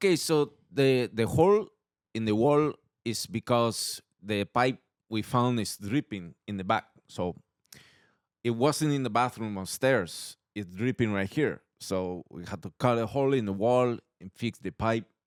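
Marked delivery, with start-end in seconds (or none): 1.1-15.0 put-on Spanish accent. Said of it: "I'll do it for you".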